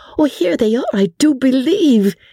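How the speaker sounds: very high, eager, excited burst. A narrator reads Sally's line as horses and wheels draw nearer, excited. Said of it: "said Sally excitedly".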